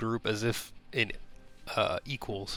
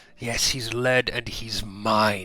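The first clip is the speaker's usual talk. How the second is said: creepy creature voice, louder; 6 dB louder than usual. Voicing a single-eyed mouth creature that claims the player: creepy eye creature voice. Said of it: "single-eyed mouth creature goes".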